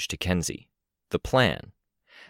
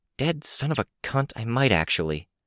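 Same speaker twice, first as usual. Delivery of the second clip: discreet aside, pitched up; 5 semitones higher than usual. Unable to react visibly while others can see her, she speaks: under her breath. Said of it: "she said under her breath".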